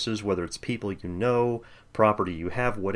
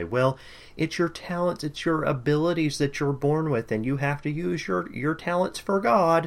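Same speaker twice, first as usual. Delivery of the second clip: derisive, mocking voice, pitched up; 7 semitones higher than usual. Speaker imitates what the churches he grew up in would say, mocking impression. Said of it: "without a sort of mocking voice like that".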